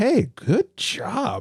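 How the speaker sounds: mock astonished admiration, very high and swooping. Retelling how people congratulated the speaker: imitating a surprised tone. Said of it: "good job in a surprised tone".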